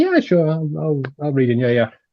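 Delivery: ordinary delivery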